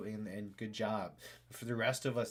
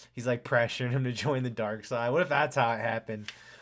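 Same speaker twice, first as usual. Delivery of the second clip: usual speaking voice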